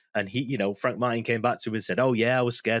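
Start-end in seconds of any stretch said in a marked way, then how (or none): 2.0-2.9 mock sarcastic tone. Retelling a fighter's reply at a press conference: imitating a sarcastic reply.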